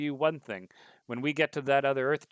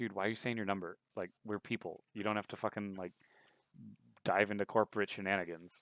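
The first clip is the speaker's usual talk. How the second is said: low, hushed half-whisper under the breath; 4 semitones lower, 8 dB quieter than usual. Retelling what a guy half-whispered to you at a squad meeting, retelling a half-whisper. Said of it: "he like whispers to you".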